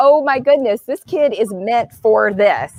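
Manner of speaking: ordinary talk, nothing marked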